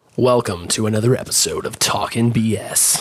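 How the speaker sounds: deep, low, slow, deliberate voice. Opening a podcast episode and welcoming listeners, in an unusually low voice. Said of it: "I don't know why my voice got so low there".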